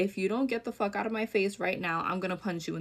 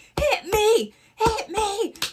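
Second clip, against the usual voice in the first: very high, loud, slow, piercing, pleading scream; 13 semitones higher, 9 dB louder than usual. Retelling a dorm-mate's breakdown on her knees: imitating someone screaming. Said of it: "she started screaming".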